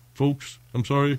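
fake apologetic voice. Acting out a killer's apology to the victim's family: mock apology as the killer. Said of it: "And now what do you say?".

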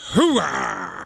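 deep, gravelly growl from the throat. Showing students a line to repeat: Al Pacino voice. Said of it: "You are Al Pacino".

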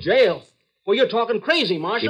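very high, too-loud, high-pitched outburst. Man whose gun the marshal takes to jail him, protesting too loudly. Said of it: "Keep your voice down".

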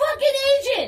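very high-pitched screaming with swooping pitch. Impression of himself on the phone with a Blue Cross agent, reenacting screaming 'agent'. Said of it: "Screaming by myself".

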